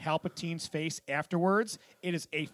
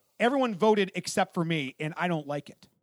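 ordinary talk

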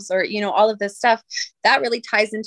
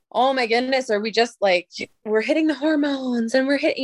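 mocking, sarcastic delivery; 4 semitones higher than usual. Recalling her own thoughts about a 12-year-old girl's emotions; retelling her own sarcasm. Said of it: "and I'm being sarcastic about it".

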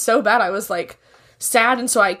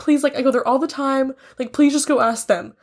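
mock weepy voice, desperate, breaking into sobs; 4 semitones higher than usual. Retelling a phone call to a bar after getting upset: imitating own hysterical crying. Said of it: "hysterically crying".

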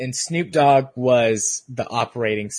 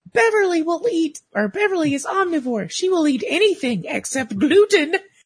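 very high-pitched, rah-rah voice. Imitating how Beverly talks: Beverly's voice. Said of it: "that's genuinely the voice".

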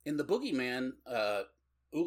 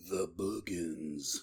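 deep, dead-serious movie trailer announcer voice; 6 semitones lower, 4 dB quieter than usual. Recalling an early-80s horror movie trailer, serious movie trailer voice. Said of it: "all trailers had the serious guy voice".

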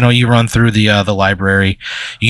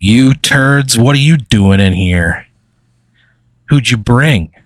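amused, chuckling, teasing, mocking tone; 2 semitones higher than usual. Voicing a marker character greeting the players: chuckling, smirking taunt. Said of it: "he kinda chuckles".

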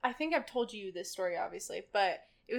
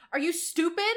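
put-on yell, higher and louder; 6 semitones higher, 7 dB louder than usual. Retelling a customer yelling about a drink: imitating a customer yelling. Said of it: "he starts yelling at me about it".

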